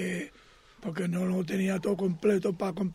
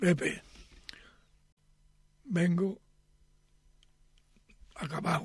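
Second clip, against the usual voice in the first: put-on near-crying voice, much slower. Speaker retelling a customer's words to him, imitating a man near tears. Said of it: "el hombre casi llorando me dice".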